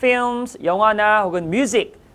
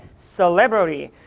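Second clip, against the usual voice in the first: celebrity with middle syllable -leb stressed; 2 semitones lower than usual. English vocabulary lesson in Korean: celebrity stressed on middle syllable. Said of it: "강세가 우리 중간에 있다는 거 잊지 마시고".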